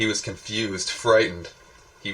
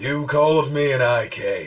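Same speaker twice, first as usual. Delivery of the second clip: high, loud voice with a menacing edge; 5 semitones higher, 5 dB louder than usual. Narrating the Gloam Glowzer answering Twig, with a menacing edge. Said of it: "there was a menacing edge to the voice now".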